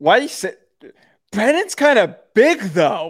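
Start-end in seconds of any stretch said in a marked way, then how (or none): 1.3-3.1 high, moany, mocking voice. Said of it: "why did you say it like that?".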